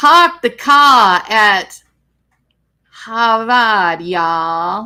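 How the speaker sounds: put-on slow, loud, poor Boston accent.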